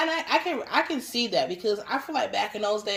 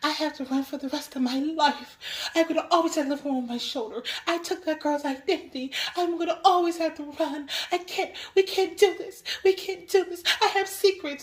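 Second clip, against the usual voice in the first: put-on tearful crying voice, higher; 7 semitones higher than usual. Retelling a scene where a crying character pleads in an alley: imitating someone crying.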